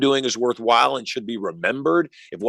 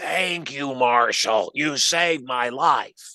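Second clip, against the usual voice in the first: very slow, voiceless speech as if without larynx. Retelling what a woman said to the speaker, imitating a voice without a larynx. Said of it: "she's talking like this. She's lost her larynx".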